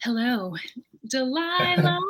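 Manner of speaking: late-night evening radio DJ host voice. A guest shows the host how the intro was said, imitating an evening voice. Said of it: "You said it like it was just like".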